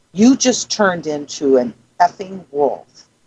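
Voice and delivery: mock-stern, very stern voice. Retelling a story, the speaker quotes a woman to a man who shifted: retelling a very stern voice. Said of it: "she said in a very stern voice".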